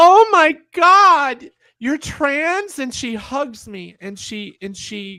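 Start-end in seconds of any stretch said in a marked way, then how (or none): 0.0-2.8 shrill, very loud, high, drawn-out shriek. Telling a story, the speaker quotes what a woman said to them; retelling her loudest shout. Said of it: "in the loudest freaking voice".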